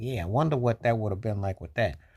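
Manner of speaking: ordinary delivery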